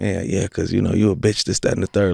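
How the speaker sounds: put-on confrontational, taunting tone. Retelling how someone got in his face after stealing from him: imitating someone getting in his face. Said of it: "in my face and being like".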